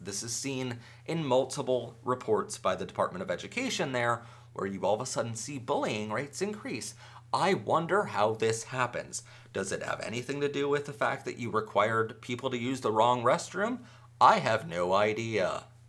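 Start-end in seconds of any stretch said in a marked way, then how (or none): 7.3-15.6 sardonic, sarcastic, mock-innocent, fake-puzzled musing. Reading out a man's quoted comment, retelling a sarcastic remark. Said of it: "he says, you know, sarcastically".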